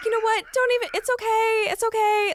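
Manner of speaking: pitying, soothing tone, very high. Retelling how a parent comforted her while she cried, imitating a pitying parent. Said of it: "feeling bad for you".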